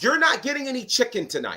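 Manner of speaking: mocking shrill, swooping, angry screaming. Retelling how Zilla Fatu's mom screamed at Journey from the crowd, imitating her screaming. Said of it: "she is screaming at Journey".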